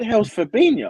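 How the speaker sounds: high, loud, incredulous outburst. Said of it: "I was like".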